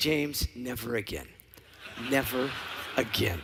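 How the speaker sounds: acted-out quiet mutter. Retelling what the Emperor's player said to James, retelling a mutter under the breath. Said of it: "and under his breath".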